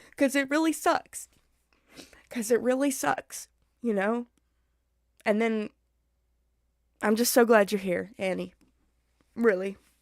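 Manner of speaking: getting emotional, voice catching. Reading a chat comment from a viewer who kept living, getting emotional. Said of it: "I'm gonna get emotional".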